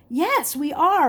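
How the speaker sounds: bright, cheerful. A young man answering a traveler's question as two groups meet, cheerily. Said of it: "one of the young men answered cheerily".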